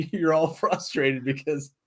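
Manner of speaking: slow speech with laughter through it. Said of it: "I'm laughing right now".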